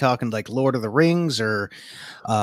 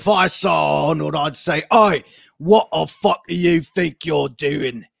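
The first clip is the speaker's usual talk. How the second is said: put-on Manchester accent, confrontational and squaring up; 3 semitones higher than usual. Voicing someone from Manchester speaking to Arnold: Manchester accent. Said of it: "This is how we talk around here".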